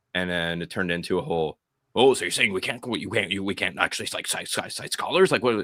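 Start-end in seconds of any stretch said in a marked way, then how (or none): 2.0-5.3 mock rapid fast-talking speech. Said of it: "I can't even talk that fast".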